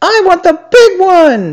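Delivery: very high, shrill, screeching scream. The hare answers the elf's question about presents; screaming. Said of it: "screamed the hare".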